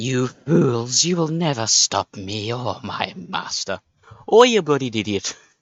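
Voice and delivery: slow, forced, put-on accent drifting Irish. Voicing a boss-fight villain in a put-on accent drifting Irish. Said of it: "that's more Irish".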